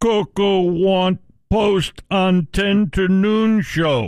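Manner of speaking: put-on talking gorilla voice. Asked for a best impression on the show, Norm answers in a Coco the Gorilla impression. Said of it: "give us your best Coco the Gorilla impression".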